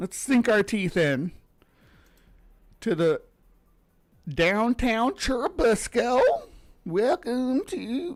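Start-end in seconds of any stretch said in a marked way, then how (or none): 4.3-8.2 over-the-top, sing-song Southern drawl. Speaker introducing downtown churubusco, really southern accent. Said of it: "I'm doing this really southerny accent".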